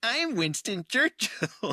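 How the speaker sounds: very high cartoon voice, pitch swooping around. Retelling a Family Guy gag on an airplane: Peter Griffin voice. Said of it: "Peter Griffin gets up and he's like".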